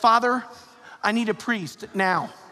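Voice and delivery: nervous, anxious, pleading voice. Retelling a gentleman by the playground asking for a priest: imitating a nervous man. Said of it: "all nervous".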